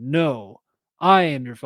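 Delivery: ordinary delivery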